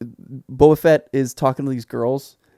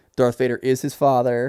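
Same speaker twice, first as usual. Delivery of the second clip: plain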